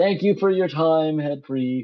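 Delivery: booming, very loud, full-volume shout. Asked to speak up, a character repeats thanks to the head priest, shouting. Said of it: "No need to yell".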